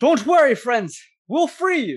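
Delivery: very high, very loud, shrill, booming shout. Voicing a character calling out to allies hanging from the ceiling: yelling out. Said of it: "And she just yells out".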